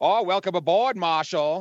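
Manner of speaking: put-on Boston accent. Quoting characters from the movie under review: imitating a boston accent. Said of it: "Boston accent".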